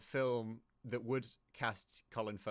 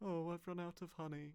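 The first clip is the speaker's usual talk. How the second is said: soft, a little higher-pitched bear voice; 8 semitones higher, 5 dB quieter than usual. Recalling a film, the speaker does a Winnie the Pooh voice. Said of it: "bears that sound a little".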